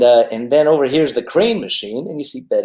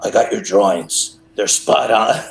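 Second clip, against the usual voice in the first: put-on New York accent; 3 semitones lower than usual. Retelling a surprise phone call from the author: Andrew Vachss New York voice. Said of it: "his New York voice".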